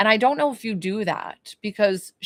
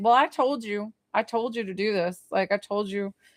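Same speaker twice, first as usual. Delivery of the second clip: mock know-it-all, sassy, bossy scolding tone. Voicing a spirit during a reading who bosses someone around: imitating someone being sassy. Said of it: "kinda, like, sassy about it".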